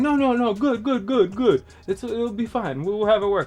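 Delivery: terrible put-on Nigerian accent. Retelling a man's reassurances, the speaker does a bad Nigerian accent. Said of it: "picture a Nigerian accent".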